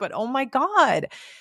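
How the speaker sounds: choked-up emotional voice. Speaker recalling grieving kids after a funeral, getting emotional. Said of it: "now I'm getting emotional talking about this".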